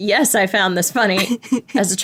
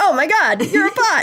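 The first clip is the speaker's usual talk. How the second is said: put-on thrilled, starstruck teenage gush, pitched-up and excited; 8 semitones higher than usual. Retelling a scene where a teenager recognizes a bot: imitating an excited teenager. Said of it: "it's just very excited".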